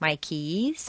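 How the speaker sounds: stress on "keys" with a rise. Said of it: "Use your rubber band for each stressed word".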